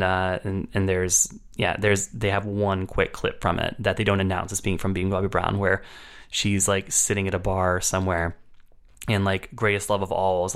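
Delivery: ordinary talk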